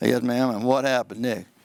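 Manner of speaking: low, flat, dull, unvaried monotone drone. Showing how questioning a witness in front of a jury sounds: monotone. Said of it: "If I'm back there monotone, like".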